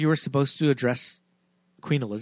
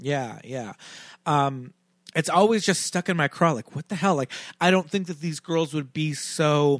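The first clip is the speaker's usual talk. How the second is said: plain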